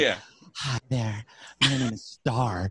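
fake seductive panting voice. Acting out a woman's bedroom talk, put-on sexy voice, heavy breathing. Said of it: "it's a sexy voice with heavy breathing".

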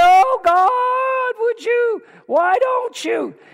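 high, begging plea with "God" drawn out. Imitating people who pray to God: imitating a begging prayer. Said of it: "stop begging and, and pleading".

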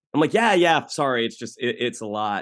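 ordinary talk

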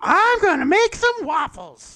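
swooping robot squeal, very high and very loud. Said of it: "And just the high pitch".

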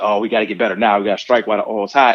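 plain

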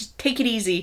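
normal talking voice

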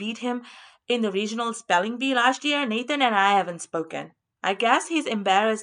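ordinary delivery

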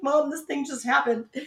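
play-acted tearful crying in a high voice. Recalling coming home to her mom, retelling her own crying. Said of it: "I came home and I'm crying and I'm like".

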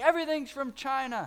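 acted-out high, ranting man's yelling shout. Retelling a man leaving a store, imitating a man yelling. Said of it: "just yelling".

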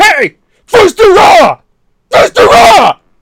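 very high, very loud, angry, dragged-out shrill holler. Acting out getting angry at the Dovahkiin: acted yell at the Dovahkiin. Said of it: "is, like, that how you yell at him?".

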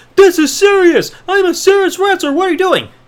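put-on high screaming outburst. Narrating a wrestler yelling at another wrestler in the ring, acting out screaming. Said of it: "starts screaming at him".

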